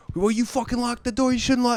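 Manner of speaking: acted-out, high-pitched hollered yell. Retelling a man scolding them for locking the door: imitating someone yelling. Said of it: "He, like, yelled at us".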